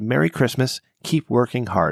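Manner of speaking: ordinary talk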